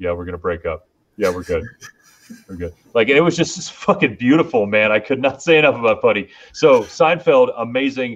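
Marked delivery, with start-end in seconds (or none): 0.0-2.7 low, soft, bone-dry, expressionless deadpan. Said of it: "so good with that deadpan".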